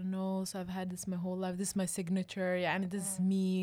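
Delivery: plain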